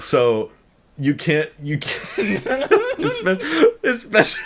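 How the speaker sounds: very high giggling, stumbling over words. Describing a plain pickup truck to friends, laughing while talking. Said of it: "I'm just laughing".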